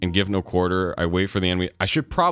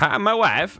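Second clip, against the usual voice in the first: high, put-on Eastern European accent, pitched way up; 11 semitones higher than usual. Reading a text aloud, the speaker slips into a Borat impression. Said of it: "getting like Swedish vibes out of my voice".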